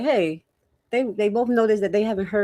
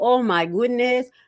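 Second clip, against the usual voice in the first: put-on Haitian accent; 3 semitones higher than usual. Repeating an exclamation, this time in a put-on Haitian accent. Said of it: "I had to say it like a Haitian".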